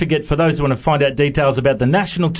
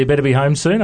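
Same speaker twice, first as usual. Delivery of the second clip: ordinary delivery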